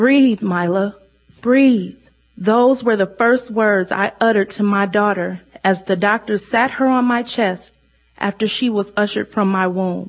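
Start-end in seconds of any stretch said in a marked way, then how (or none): 0.0-2.0 mock desperate, imploring, begging voice. A mother recalls her newborn daughter placed on her chest, reenacting begging. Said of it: "I begged her to breathe".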